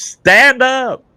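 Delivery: shrill, very high-pitched mock yell. Retelling yelling at a man splashing in the lake: imitating own past yell. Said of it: "I yelled at him".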